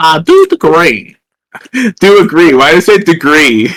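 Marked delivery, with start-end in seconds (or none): 0.0-2.5 put-on southern accent with slow drawl. Agreeing that it sounds important, trying a put-on southern accent. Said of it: "I'm trying to do like a like a southern like accent".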